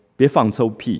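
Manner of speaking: ordinary talk, nothing marked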